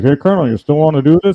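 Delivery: mock mutter from mouth's side. Retelling a quiet question to the colonel, retelling a mutter out of mouth's side. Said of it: "out of the side of my mouth".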